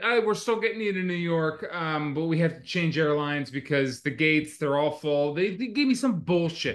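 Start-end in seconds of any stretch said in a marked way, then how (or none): none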